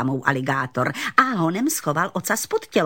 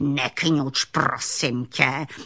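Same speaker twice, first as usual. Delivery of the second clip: put-on growling voice of a grumpy old man; 3 semitones lower than usual. Narrator reading a story, an alligator snapping at a frightened little raccoon: growling alligator. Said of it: "zavrčel na něho aligátor".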